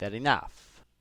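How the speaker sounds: put-on Italian accent. Speaker dropping back into a character's italian accent for a moment: italian accent. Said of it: "drop back into my Italian accent".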